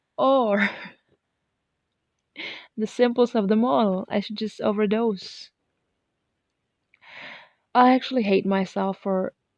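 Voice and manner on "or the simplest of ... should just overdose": speaking through laughter. Recounting a difficult night, trying not to get emotional: laughing while talking. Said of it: "talking while laughing at this moment".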